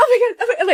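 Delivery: very high, frantic, panicked voice. Retelling mom's panic during driving lessons: imitating mom freaking out. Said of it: "freaking out".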